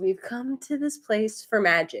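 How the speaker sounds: soft, hushed ASMR voice. Recounting the ad shown before every AMC movie, quoting Nicole Kidman in an ASMR voice. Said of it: "in like an A S M R voice".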